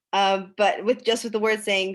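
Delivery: ordinary delivery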